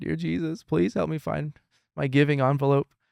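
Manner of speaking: mock-tearful child voice. A father retells his six-year-old son's prayer, imitating Levi tearfully praying. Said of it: "tears again".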